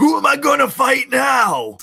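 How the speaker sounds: shrill, very high, very loud screaming cry. Retelling a show scene where a rival crashes a wake: imitating a scream. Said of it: "the screaming".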